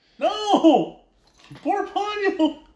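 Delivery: put-on yelling. Retelling watching a movie and yelling at the screen: imitating yelling at the screen. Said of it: "I'm already yelling at the screen".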